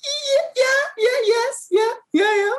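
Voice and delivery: jittery, very high, nervous string of yeahs. Retelling answering a man who asked if the speaker was [name], in a retold nervous high voice. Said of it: "my voice goes really high".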